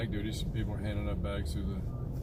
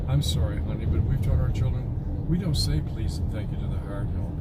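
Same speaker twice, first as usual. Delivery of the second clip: ordinary talk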